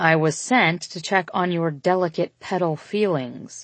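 usual speaking voice

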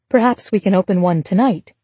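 usual speaking voice

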